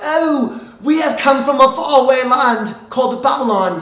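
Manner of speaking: loud, fancy, clumsy put-on British accent. Acting out fancy visitors from Babylon arriving at Jerusalem: bad put-on British accent. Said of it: "I don't have a good British accent".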